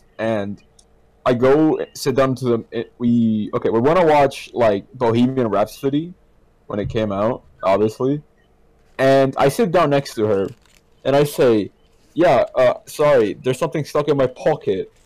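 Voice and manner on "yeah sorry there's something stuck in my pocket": put-on, as-British-as-it-gets accent. Retelling a line said to an ex at the movies: British accent. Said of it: "in the most British way possible".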